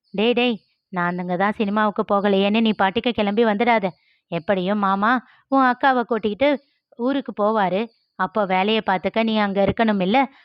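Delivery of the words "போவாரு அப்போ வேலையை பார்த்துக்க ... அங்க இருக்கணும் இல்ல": ordinary delivery, nothing marked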